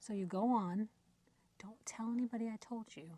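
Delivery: speaking in a whisper. Passing on a secret sale hint so someone nearby won't hear: whispering. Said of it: "I have to whisper".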